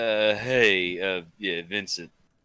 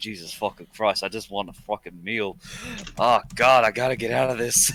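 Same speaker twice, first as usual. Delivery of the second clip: hushed, private mutter under the breath. Voicing a character at a crowded table: muttering under his breath. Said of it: "but under his breath".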